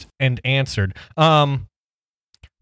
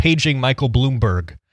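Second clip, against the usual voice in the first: ordinary delivery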